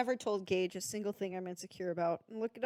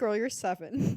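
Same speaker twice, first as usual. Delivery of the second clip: plain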